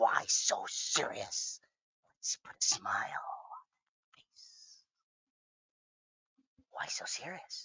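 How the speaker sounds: slow, breathy whisper. Doing voices for another speaker: Joker voice. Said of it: "I also do, uh, the Joker pretty well".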